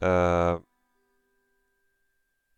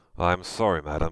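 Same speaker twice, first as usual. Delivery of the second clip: normal talking voice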